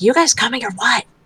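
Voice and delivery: theatrical whisper. Voicing a character who turns around to the group: stage whisper. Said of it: "turn around and stage whisper".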